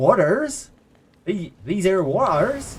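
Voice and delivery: Cornish accent, Cornish vowels in waters. Showing that you can't say one word without it, slip back into a Cornish accent. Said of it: "I can't say waters without going back to a Cornish accent".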